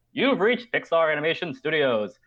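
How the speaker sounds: high-set movie phone announcer voice. Retelling calling Pixar and reaching an answering machine, in a movie-phone announcer voice. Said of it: "movie phone voice answering machine".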